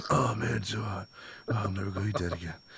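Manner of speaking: hushed half-whisper, under the breath. Retelling how a guy at work talks to himself: imitating a coworker half-whispering. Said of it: "he starts whispering to himself".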